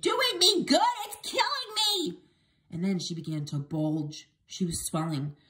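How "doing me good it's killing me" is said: shrill shriek, pitched way up. A grandmother bouncing in her chair answers her grandson about the medicine; screaming. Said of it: "she screamed".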